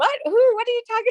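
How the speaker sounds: very high, quick, darting, rising intonation. Imitating a group member looking around, as promised: imitating Mayumi looking around. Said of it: "I'm gonna imitate her, looking around".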